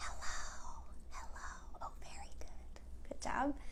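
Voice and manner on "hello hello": faint, soft, hushed, breathy whisper. Leading a group in a clapping rhyme, saying hello very quietly. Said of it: "Let's say hello as quiet as we can".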